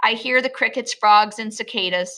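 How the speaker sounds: ordinary delivery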